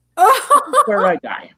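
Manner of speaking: very high, slow panicked laughing voice. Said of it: "I'm like".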